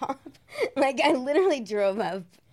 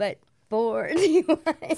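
laughing through the words; 3 dB louder than usual. Admitting how many DUIs there were: laughing while talking. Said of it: "I shouldn't be laughing".

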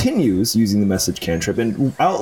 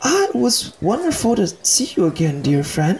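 very high, quick, very calm and smoothly composed; 10 semitones higher than usual. A game master voices a water genasi switching from upset to calm, very calm soft-spoken voice. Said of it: "and you see her very quickly code shift from this very upset woman to a very, very calm, soft-spoken water genasi".

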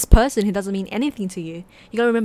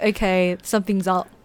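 usual speaking voice

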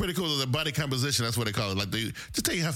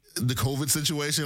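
plain

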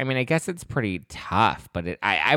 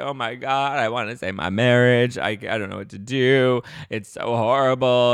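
slower, put-on mock crying; 3 semitones higher, 3 dB louder than usual. Retelling a Real Housewives cast member whose marriage is imploding, imitating someone crying. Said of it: "And she's like crying".

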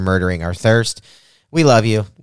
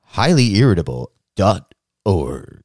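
slick radio commercial announcer delivery. Showing the others how radio ads are read, in radio ad announcer voice. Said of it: "let me do it like i like doing the the radio voice".

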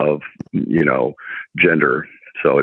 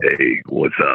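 put-on deep, low bass voice. Telling how a favorite name gets greeted, the speaker acts it out in deep bass voice. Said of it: "that bass voice greeting".

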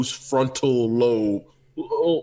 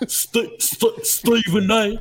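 put-on congested voice, much higher in pitch; 7 semitones higher than usual. Showing how he sounds, a congested Steve Vaday impression. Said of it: "You just have to sound congested".

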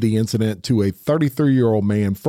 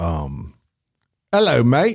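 put-on British accent. Asked to give the accent, answering with a British accent. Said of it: "Give us the accent".

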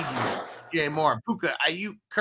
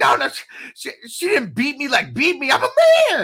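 put-on scream, much higher, louder, slower; 12 semitones higher, 10 dB louder than usual. Retelling how a man protested after Jenny was cuffed, in a mock high-pitched girly scream. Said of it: "this high pitched, like, little girly scream voice".

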